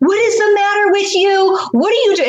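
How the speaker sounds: mock very high, furious, shrill top-of-lungs screaming. Retelling how the mother came into the kitchen: imitating mother screaming. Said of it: "starts screaming at the top of her lungs".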